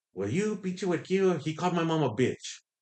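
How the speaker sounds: high-pitched, scolding yell in a woman's voice. Retelling an argument with a league official: imitating a lady yelling. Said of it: "the lady's yelling at me, and she's like".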